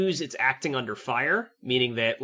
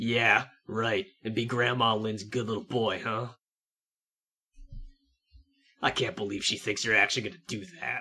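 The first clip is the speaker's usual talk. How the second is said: character voice whisper, lower in pitch; 3 semitones lower than usual. As the lieutenant Thorndog, leaning in to Chris, whispering in his ear. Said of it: "he's going to whisper in your ear".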